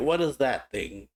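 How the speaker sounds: normal talking voice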